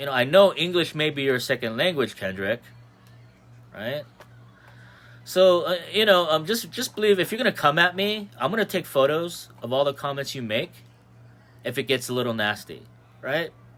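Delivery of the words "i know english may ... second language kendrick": ordinary talk, nothing marked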